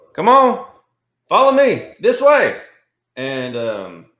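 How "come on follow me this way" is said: very loud, high-pitched yell. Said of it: "I'm just gonna yell out".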